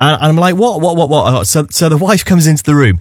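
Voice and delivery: ordinary talk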